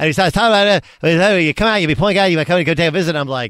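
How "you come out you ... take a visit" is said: put-on Boston accent, rattled off fast. Retelling how a coach offered you a scholarship visit, in a Coach Calhoun voice, really fast Boston accent. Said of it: "a Boston accent".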